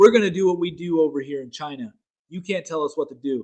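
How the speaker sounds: plain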